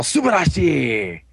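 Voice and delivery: slow, mock shout of "subarashi". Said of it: "so he's all".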